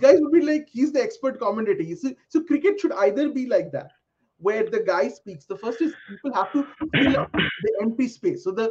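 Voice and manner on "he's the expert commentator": ordinary talk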